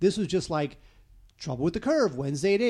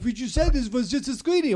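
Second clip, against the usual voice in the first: put-on French accent, higher pitch; 6 semitones higher, 4 dB louder than usual. Retelling her complaint on arriving at the premiere: imitating a French accent. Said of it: "or whatever French accent it is".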